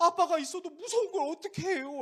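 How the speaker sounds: put-on high, loud, plaintive whiny child voice.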